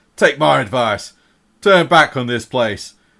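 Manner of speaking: bristling, irritated male dwarf voice. Game master voices a male dwarf who spots the players, bristling dwarf warning. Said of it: "his beard bristling".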